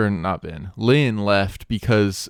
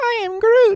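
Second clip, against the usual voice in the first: very high, slow, drawn-out voice; 4 dB louder than usual. Performing a line after being asked for an impression: Groot impression. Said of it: "Groot impression".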